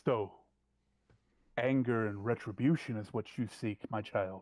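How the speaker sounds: smooth, silky, low bass-baritone voice. Telling a story, voicing the other voice she hears: silky bass-baritone voice. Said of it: "A very silky, just bass baritone voice".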